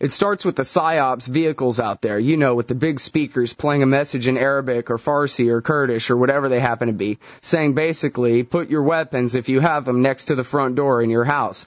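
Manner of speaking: ordinary talk, nothing marked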